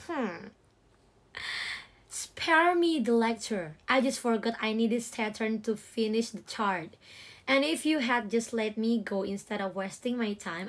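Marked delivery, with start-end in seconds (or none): none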